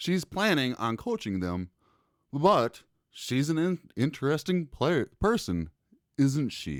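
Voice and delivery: read aloud with dramatized delivery. Dramatizing a quote about Cheryl Reeves: [name] dramatization voice. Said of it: "That was [name], uh, dramatization".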